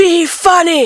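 blurted high shout. Recounting a guy at the back of the room shouting, retelling a heckler's shout. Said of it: "a guy from the back of the room shouts".

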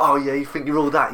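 mock swaggering bravado, high and cocky. Retelling stepping up to someone's face, imitating his own bravado. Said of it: "I kind of did the whole bravado thing".

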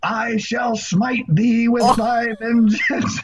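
very high, very slow, drawn-out scream. Retelling how Dave Schrader walked into a dust devil: imitating Dave Schrader screaming.

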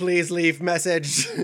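loud machine-like voice. Recalling an answering machine cameo line, imitating a robot-like voice. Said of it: "He tried to sound like a robot".

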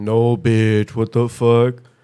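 very slow, loud, teasing, very drawn-out voice. Showing how they mimic someone they talk about: imitating Tony. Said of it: "mimic people, like, when I'm talking about 'em, like Tony".

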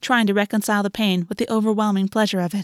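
plain

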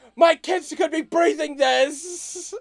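very high, very loud shrill scream, "this" dragged out. Retelling how a man ran over and started yelling, imitating someone screaming. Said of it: "starts screaming".

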